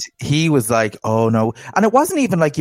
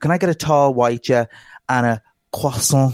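put-on, imitated French accent. Mocking people ordering coffee, imitating a French accent. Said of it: "All of a sudden the accent comes out".

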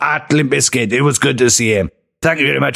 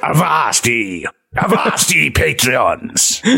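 hammy, swashbuckling pirate voice. Thanking Patreon supporters at the episode's end, in a pirate voice. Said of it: "Pirate [name] unlocked".

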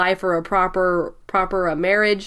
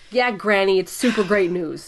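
ordinary talk, nothing marked

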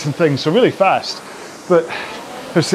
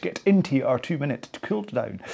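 soft, strong, put-on Scottish accent; 2 semitones lower, 9 dB quieter than usual. Workout instructor redoing a misspoken cooldown intro: very Scottish accent. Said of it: "As though I was very Scottish".

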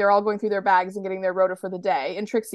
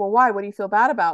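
put-on, mock-defensive tone. Recounting what Patsy says to Trixie, in a mock-defensive tone. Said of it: "Patsy says kind of defensively".

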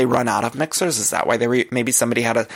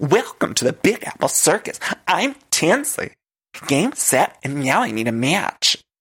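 big, exaggerated, slow, sing-song delivery; 5 semitones higher than usual. Retelling an opening as ringmaster: imitating Tinsley's Disney Channel acting. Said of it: "doing very Disney Channel acting".

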